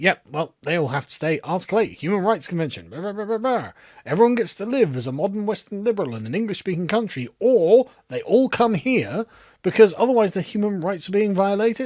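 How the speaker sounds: usual speaking voice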